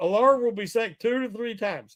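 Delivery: normal talking voice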